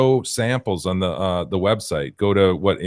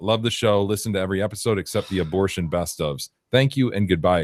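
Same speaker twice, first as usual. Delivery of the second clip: ordinary talk, nothing marked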